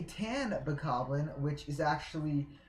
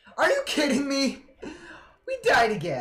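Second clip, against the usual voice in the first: very high, very loud, drawn-out, shrill voice-cracking yell; 10 semitones higher, 8 dB louder than usual. Speaker reacting as the team dies again, voice cracking. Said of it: "sorry for that voice crack".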